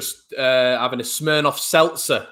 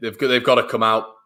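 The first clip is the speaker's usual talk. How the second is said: normal talking voice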